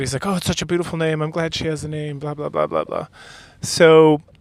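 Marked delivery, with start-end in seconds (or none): 0.3-3.1 put-on eager, delighted, gushing, excited chatter. Retelling a character's reaction to hearing a name: imitating excited speech. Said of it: "very excited".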